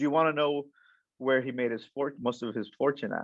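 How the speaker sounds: usual speaking voice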